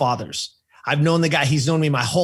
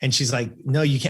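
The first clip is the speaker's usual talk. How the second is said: ordinary talk, nothing marked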